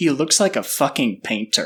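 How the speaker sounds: put-on whispered delivery. Retelling what a girl said to her friend in an alley: imitating a whisper. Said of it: "I heard this girl try and whisper".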